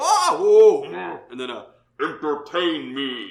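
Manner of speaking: muffled faraway yelling. Voicing a muffled figure behind a door: muffled yelling voice. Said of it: "a yelling".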